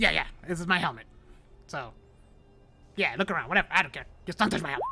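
scatterbrained, twitchy, jittery, possessive devil voice rambling. You play a jumpy devil guarding his helmet, granting the visitors permission to look around but warning them off it, twitchy. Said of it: "And you see that this spine devil, it's more twitchy than most devils. And not quite as composed as any other devil in Avernus I've seen so far".

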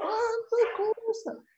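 acted, shrill, very high shout. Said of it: "putting her voice up in the air".

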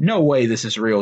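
ordinary delivery

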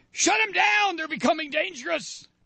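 very high mock screaming shriek. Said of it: "start screaming".

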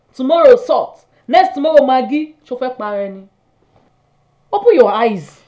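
speaking loudly. Arguing against the other speaker's love for a keke driver: raised voice. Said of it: "I raise my voice".

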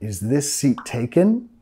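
rising, question-like pitch on taken. English intonation lesson for Spanish speakers: rising pitch on 'taken'. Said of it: "subiendo, de entonación al final".

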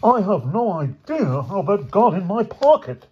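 very high, desperate, begging, pleading tone. Accused by the man he calls sir, he protests: pleading. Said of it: "pleaded George".

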